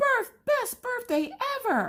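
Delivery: shrill, piercing, very high shout. Retelling a birthday girl chasing her brother with a spider: imitating someone yelling.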